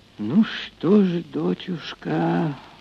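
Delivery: whispering. A mother answers her daughter, who has decided to leave: whispered. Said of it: "прошептала она".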